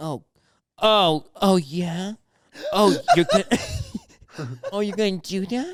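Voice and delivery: very slow, suggestive, dirty-sounding sleep talk. Retelling a friend's sleep talking while others try to wake him; imitating dirty sleep talk. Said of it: "dirty sleep talking".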